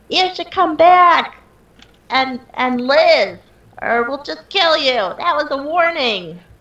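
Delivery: very high, slow, drawn-out in-character yell. Voicing a character who warns a fleeing cultist to come back: yelling in character. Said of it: "I'll just yell and I'll say".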